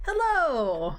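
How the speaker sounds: very cheery, bright, chipper, upbeat voice. Player turning on a communication device, greeting it in a very cheery tone. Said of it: "in a very cheery tone".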